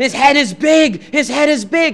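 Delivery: put-on yelling. Retelling a radio argument, imitating the other guest yelling. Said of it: "He's yelling this at me".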